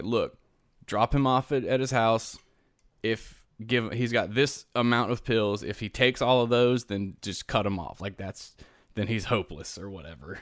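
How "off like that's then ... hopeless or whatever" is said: normal talking voice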